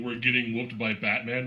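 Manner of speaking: ordinary talk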